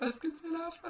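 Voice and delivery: high, wailing mock sob. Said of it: "Pourquoi tu pleures?".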